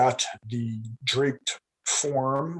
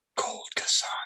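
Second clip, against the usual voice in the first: put-on drunk muttering under the breath. Telling a story, acting out a drunk on a bench muttering under his breath. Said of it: "sort of under his breath, he mutters".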